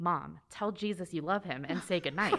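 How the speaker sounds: put-on, very serious child voice. A mother retells what her child said at prayer time: imitating child's serious voice. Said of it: "she just has the most serious voice".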